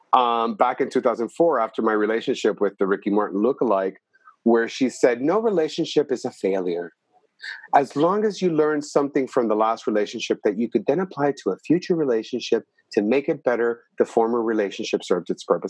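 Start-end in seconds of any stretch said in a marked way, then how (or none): 5.2-15.7 mild, gentle, inspirational lecturing delivery. Quoting a lecture heard on cassette, Marianne Williamson impersonation, soft voice. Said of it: "the best Marianne Williamson impersonation, by the way, the soft voice".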